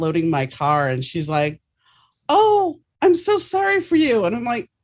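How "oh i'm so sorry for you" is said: put-on loud voice, higher and louder. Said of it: "saying this really loud in the parking lot".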